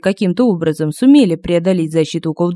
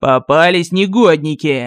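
growling, snarled-out voice. Narrator reads a figure catching the boys, growling. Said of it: "прорычал".

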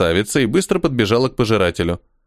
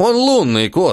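outraged, indignant, pitched-up delivery; 7 semitones higher than usual. Khali answers a beauty's remark, indignant. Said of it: "возмутился Кхали".

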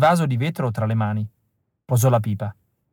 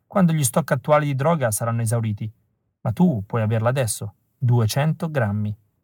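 plain

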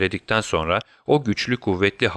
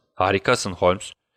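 plain reading voice

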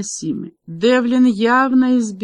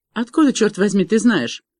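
ordinary delivery

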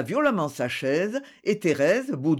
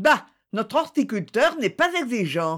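mocking, dismissive, sneering, scornful snicker; 4 semitones higher than usual. Mme Jalade comments on the horticulturist to the others, sneering. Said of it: "ricana Mme Jalade".

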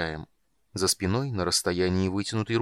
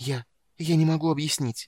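whispered, gasping with pain, much higher and slower; 6 semitones higher than usual. Narrator reads a woman answering a man tightening his grip, whispered, gasping with pain. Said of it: "прошептала Эмбериу".

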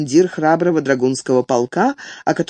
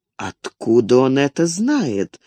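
slow, bewildered, astonished wondering aloud; 2 semitones lower than usual. Metternich reacts to Napoleon's son's question to the marshal; muttered in amazement. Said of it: "с изумлением пробормотал Меттерних".

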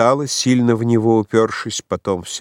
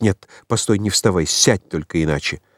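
ordinary delivery

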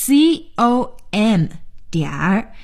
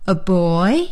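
put-on boy said with rising, upward lilt; 3 semitones lower than usual. Intonation drill, first version said with a rise: rising pitch at the end of boy. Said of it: "我用升调".

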